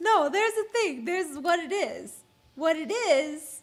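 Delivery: slow, put-on childlike little girl voice. Trying to remember something mid-conversation, the speaker slips into a little girl voice. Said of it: "That's her little girl voice".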